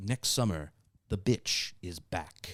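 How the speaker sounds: put-on movie trailer announcer voice. Recalling a film's TV commercial from childhood, in a movie trailer announcer voice. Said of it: "trailer voice guy, you know, whose voice sounds like this".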